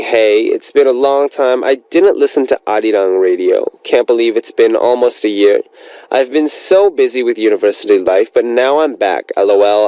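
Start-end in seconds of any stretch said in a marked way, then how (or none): none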